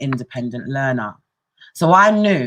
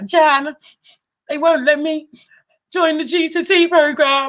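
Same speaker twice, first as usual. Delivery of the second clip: put-on very high, slow, blubbering, tearful sobbing; 13 semitones higher, 3 dB louder than usual. Retelling a phone call to a mentor, Jan: retelling sobbing on the phone. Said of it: "I was just crying down the phone".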